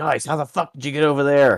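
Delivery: very high-pitched holler. Playing Fisker, calling to companions across terrain: in-character yell. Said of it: "Fisker's just gonna yell".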